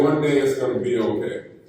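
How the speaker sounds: ordinary talk, nothing marked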